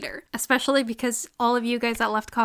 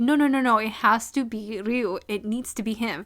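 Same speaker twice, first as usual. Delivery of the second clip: frantic, panicking, insistent tone. Retelling a drama scene where a character panics: imitating panicking.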